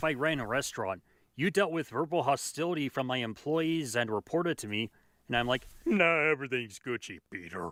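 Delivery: ordinary delivery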